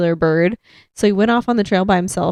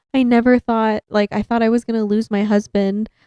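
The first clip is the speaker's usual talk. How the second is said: put-on weeping, crying through the words; 2 semitones higher than usual. Retelling what a wife said on tv footage: imitating a crying wife. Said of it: "his wife, like, crying".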